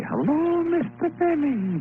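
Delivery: put-on high, slow comic voice with Yiddish accent. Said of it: "had a little Yiddish accent".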